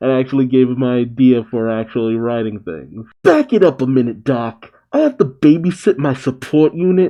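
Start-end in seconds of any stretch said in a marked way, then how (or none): 3.2-7.1 put-on Brooklyn accent, laid on thick. Reading a character's comic lines aloud: Brooklyn accent. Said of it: "I'm giving her a Brooklyn accent".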